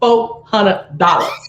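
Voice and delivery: put-on heavy country-voice accent. Repeating the price of a painting order: country voice. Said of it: "I said it in my country voice".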